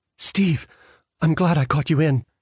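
faint, thin, small distant voice. Maureen speaks to Steve over the telephone: faint, like a lost child. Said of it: "faintly, like the voice of a child lost".

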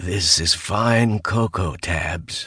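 sandpapery drawl. Narrator reads a character's remark to another character, sandpapery drawl. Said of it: "the words coming out in a sandpapery drawl".

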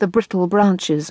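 plain

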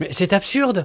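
exclaiming loudly. Narrator reading a character's retort to the bloodstain story, exclaiming. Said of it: "s'écria Washington Otis".

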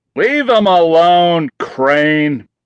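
slow, drawn-out yell. Narrator voicing a prisoner shouting from another cell, yelling. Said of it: "yelled Barry Schultz from another cell".

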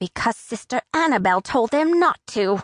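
cross, heated, angry voice. Laura answers a question from someone who was not defended, in an angry voice. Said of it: "Laura said in an angry voice".

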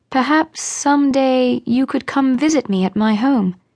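careful, unsure, hesitant tone. Marion makes a suggestion to Caroline, tentatively. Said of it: "Marion tentatively suggested".

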